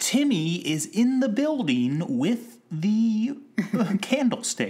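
very high, over-enunciated voiceover, every word spelled out. Showing how voiceover for a television show had to be read: over-enunciated voiceover. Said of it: "You had to enunciate".

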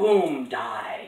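imitated booming voice. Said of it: "doing the booming voice and killing me thing".

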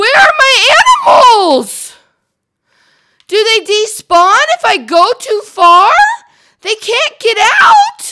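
very high, loud, distraught panicked wail.

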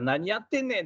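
high-pitched, angry, snapping delivery.

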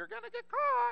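very high, rough, squawking parrot voice. Narrator telling a burglar story, giving the parrot's line in a parrot character voice. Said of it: "the parrot said".

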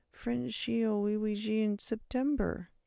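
indistinct mumble, slow and high. Without looking at the teacher, Victor answers in class, mumbled. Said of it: "Victor mumbled".

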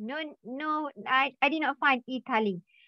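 normal talking voice

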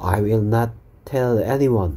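very slow, careful delivery.

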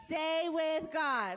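earnest, meaning every word, with conviction. Showing the kids how to say the verse: like you mean it. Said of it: "say it like you mean it".

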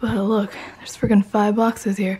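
winded, breathless. Pointing out the pile of boxes, speaking out of breath. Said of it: "I'm out of breath".

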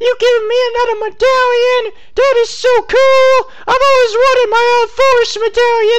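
very high, loud, high-pitched joking voice. Streaming a game and receiving a medallion, reacting in a high-pitched joke voice. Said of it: "just talking in a high-pitched voice every time I get a medallion".

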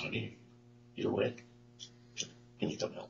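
very quiet, hushed voice. Retelling how she asked the speaker for help: very quiet voice. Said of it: "in a real quiet voice".

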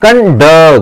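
conduct with stress on last syllable "-duct". Lesson on the iambus, stress on second syllable of 'conduct'. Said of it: "तो आप ऐसे कहते हैं conduct. ... Accented बाद वाला है, अनएक्सेंटेड पहला है".

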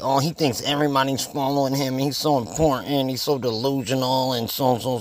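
scornful mocking dumb voice. Speaker imitates ignorant people who dismiss Cooper, in a mocking put-on voice. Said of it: "That's why I use that voice".

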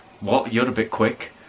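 normal talking voice

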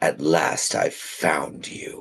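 low, deep, rumbling, resonating growling voice. A narrator voices a presence speaking into a character's mind: deep, resonating, growling voice. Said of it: "a deep, resonating, growling voice speaks to you".

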